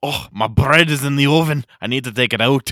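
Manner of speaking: put-on loud, hammy Scottish accent. Asked to pretend to be a baker taking bread from the oven; scottish accent. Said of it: "Scott, I can do a little bit".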